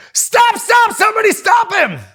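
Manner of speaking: loud, high-pitched yell.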